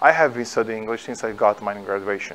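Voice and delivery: falling pitch on graduation. English lesson on affirmative sentences, falling intonation at sentence end. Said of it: "a entonação da forma afirmativa em inglês é decrescente".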